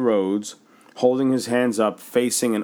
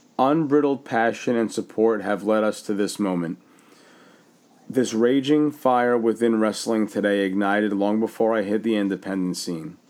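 ordinary talk, nothing marked

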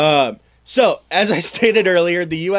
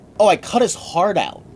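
plain

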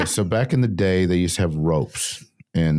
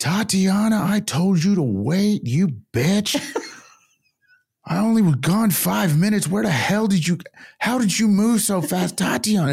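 mock scream, much higher, at top volume. Speaker retells a woman stepping over ropes, imitating her screaming. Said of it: "screaming at the top of her lungs".

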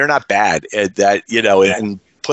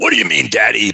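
put-on raspy voice. Retelling a phone call, doing a horrible Bob Orton Junior impression. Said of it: "that's a horrible Bob Orton Junior impression".

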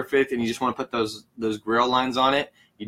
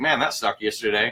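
ordinary talk

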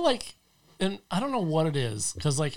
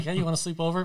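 plain

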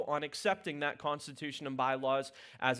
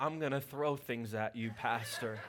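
put-on loving tone, lower in pitch; 3 semitones lower, 4 dB quieter than usual. Retelling what someone down the hallway said Monday: imitating a loving tone. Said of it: "a loving tone said".

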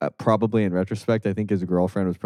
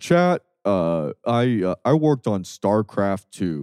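imitated, mock deep voice. Retelling how a creator addressed chat, imitating his deep voice. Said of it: "and he has a really deep voice".

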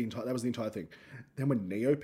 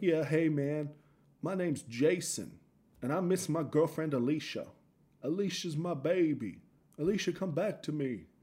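slow put-on American accent; 4 semitones higher than usual. Retelling a prank call to a radio show, american accent. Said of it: "apparently I was American".

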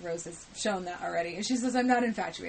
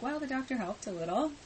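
acted dry, sarcastic understatement, pitched up; 6 semitones higher than usual. Recapping an episode, the speaker retells a daughter answering her mother as mock-sarcastic.

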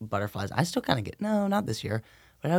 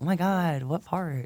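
put-on high, girlish, girly way of talking; 7 semitones higher than usual. Playing a person in the listener's class, in a girly way of talking. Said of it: "like a girl's like way of saying that".

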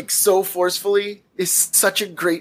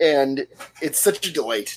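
usual speaking voice

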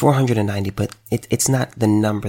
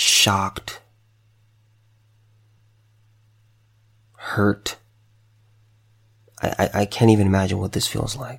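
voice straining to hold back tears. Offering condolences to parents who lost their son, holding back tears. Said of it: "I'm really trying my best not to cry".

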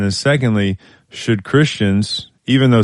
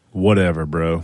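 stinging, biting, sarcastic, dismissive tone; 3 semitones lower than usual. Introducing a take-it-or-leave-it topic on sarcasm, sarcastic and stinging. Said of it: "I wanted it to sting a little bit because the topic is sarcasm. Wasn't it sarcastic?".

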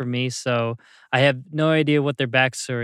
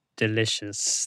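creepy, lower and quieter; 3 semitones lower, 5 dB quieter than usual. Closing the week's specials segment with a catchphrase, creepy. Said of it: "It does sound creepy when I listen to it".

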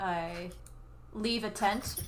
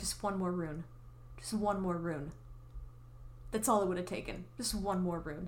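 put-on muttering under breath, much quieter; 5 dB quieter than usual. Describing a woman ignoring her painted arm, imitating muttering under breath. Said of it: "you just hear under her breath her saying".

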